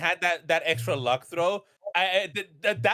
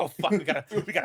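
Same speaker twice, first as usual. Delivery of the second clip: acted-out flustered, panicky, nervous fumbling, words tripping over; 2 semitones lower than usual. Recalling the group's reaction in a tense final game moment, acting out nervous fumbling. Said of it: "us like being so nervous, just like fumbling".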